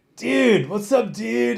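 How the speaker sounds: laid-back beach dude voice. Describing a fighter the speaker has hung out with, doing a laid-back beach guy voice. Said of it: "he talks like a guy at the beach".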